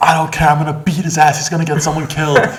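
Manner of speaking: mock furious, very high-pitched shrieking yell. Retelling how a driver behind yelled at the window: imitating a woman yelling.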